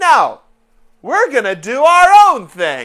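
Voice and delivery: very loud, slow, swooping comic delivery, big pitch swings. Repeating the line on purpose in a John Mulaney voice. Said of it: "It's a reasonable impression".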